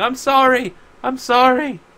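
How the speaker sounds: shrieking, very high pitched and very slow. Retelling a story, a woman runs back to the house in tears: retelling her screaming. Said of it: "she just keeps screaming".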